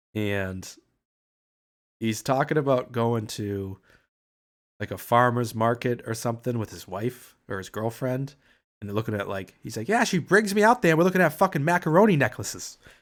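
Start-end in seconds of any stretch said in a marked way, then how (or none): 9.9-12.8 play-acted angry griping, loud with raised pitch. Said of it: "pissed 'cause he's always angry".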